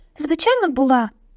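artificial, unnatural-sounding, unnaturally high-pitched voice. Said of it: "неприродньо високим голосом озвалася Герміона".

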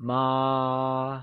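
ma held flat at a high level. Mandarin lesson on the first tone, high level tone on 'ma'. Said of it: "it is said with a high level tone, also known as the first tone".

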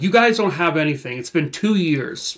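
mild, mock half-hollered yell. Retelling how an arrested suspect answered police questioning: imitating someone yelling. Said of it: "he yells back".

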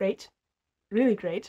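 ironic, opposite-meaning tone. Talking about a hard diagnosis, sarcastic. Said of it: "sarcastic right now".

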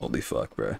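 voice gone deep. Reacting to the Kingdom Hearts three reveal, voice gone deep. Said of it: "my voice went deep".

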